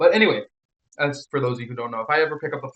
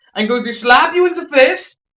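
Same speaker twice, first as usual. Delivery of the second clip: mock, put-on German accent; 12 semitones higher, 9 dB louder than usual. Showing off their german accent to the others. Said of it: "Have you ever heard my German accent?".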